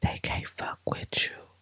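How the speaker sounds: whispered voice. Speaker addressing listeners, repeating a line in a whisper. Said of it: "I have to whisper that".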